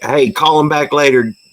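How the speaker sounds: acted, high-pitched yell, sounding far off. Retelling a call where someone in the background yelled: imitating Blue Ridge Mama yelling. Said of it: "I hear Blue Ridge Mama just yelling at me".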